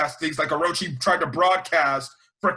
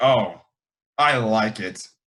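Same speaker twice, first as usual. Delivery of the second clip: mock very low, slow, drawn-out seductive sultry tone; 7 semitones lower than usual. Retelling how a voice actor delivers a line: imitating a really sexual tone. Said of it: "and I mean really sexual".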